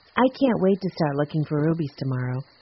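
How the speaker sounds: ordinary delivery, nothing marked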